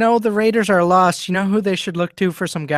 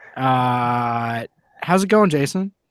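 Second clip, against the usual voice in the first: plain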